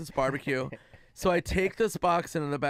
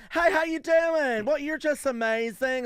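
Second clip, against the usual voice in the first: very high, fake-friendly put-on small-town accent; 10 semitones higher, 3 dB louder than usual. Imitating small-town people greeting someone: small-town accent, put on. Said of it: "You're doing the right accent".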